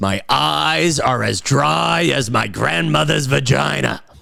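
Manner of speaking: very slow, rough, creaky, drawn-out drawl. Using a phrase in the Robert Loggia accent. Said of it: "that's the Robert Loggia accent".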